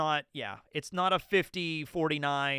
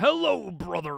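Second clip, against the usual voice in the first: loud, rough, barking wrestler voice; 3 semitones higher, 5 dB louder than usual. Trying out an impression for chat: Hulk Hogan impression. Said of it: "Teching Hulk Hogan".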